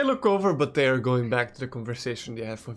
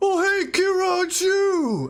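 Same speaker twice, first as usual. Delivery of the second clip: loud shout, much higher and louder; 3 dB louder than usual. The game master voices a big half-orc greeting Kira in the tavern, loud shout. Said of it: "he like shouts that really loud".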